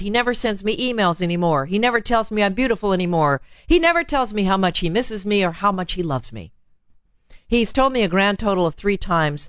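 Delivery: ordinary talk, nothing marked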